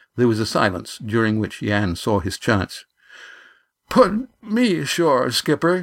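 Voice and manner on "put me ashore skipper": quavering, trembling, slightly high-pitched voice. A man asks the skipper to put him ashore, with a trembling voice. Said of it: "he said with a tremble in his voice".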